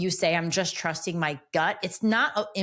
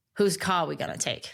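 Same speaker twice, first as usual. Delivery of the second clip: put-on Boston accent. Retelling what Jeremy Renner said after a pause, in Jeremy Renner's Boston accent. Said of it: "when I did the accent".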